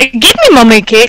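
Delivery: poorly done, fake Scottish accent. Repeating the other speaker's line back, in a bad Scottish accent. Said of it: "I can't do a Scottish accent really well".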